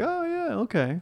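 high-pitched pet voice. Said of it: "she's like".

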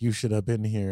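normal talking voice

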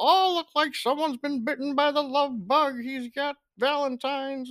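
very high, badly done grandmother voice. Retelling what a grandmother said about Valentines: horrible impression of Mamaw. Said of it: "horrible impersonation of you".

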